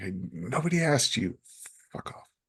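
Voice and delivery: brusque, sharp, dismissive snap. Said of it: "be like".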